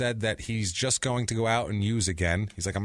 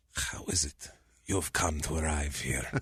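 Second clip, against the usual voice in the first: fake Mexican pimp accent, lower and quieter; 6 semitones lower, 5 dB quieter than usual. Acting out a mexican pimp visiting a prisoner: put-on bad mexican accent. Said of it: "I know that that's not a Mexican accent".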